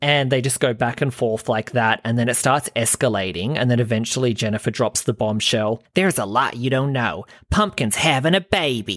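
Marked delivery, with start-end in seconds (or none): 5.9-9.0 American speaker's fake Australian accent. Recounting a character's bombshell line, American doing Australian accent. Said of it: "That sounded like an American doing an Australian accent".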